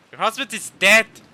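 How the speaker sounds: blunt, loud, high-pitched blurted delivery.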